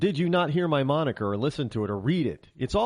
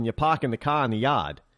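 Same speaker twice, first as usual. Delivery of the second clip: Bostonian accent; 2 semitones lower than usual. Showing how people in Boston talk: Boston accent. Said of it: "if you're in Boston".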